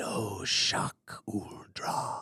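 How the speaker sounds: soft, resonant cold whisper, rumbling like distant thunder. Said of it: "terrifying resonance of distant thunder, yet feels as intimate as a cold whisper".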